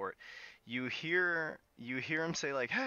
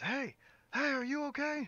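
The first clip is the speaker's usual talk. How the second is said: very high, loud calling shout; 13 semitones higher than usual. Narrating the scene, a city guard calls down from the tower, shouting down. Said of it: "he's shouting down at you".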